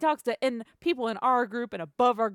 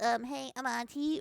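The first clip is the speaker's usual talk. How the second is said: small, little, nasally voice; 6 dB quieter than usual. Retelling how a coworker walked up and greeted them: imitating a coworker's nasally voice. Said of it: "his little nasally voice".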